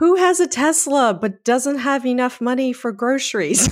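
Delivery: high shrill yelling. Retelling how she yelled at the TV, imitating someone yelling. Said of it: "she was like yelling at the TV".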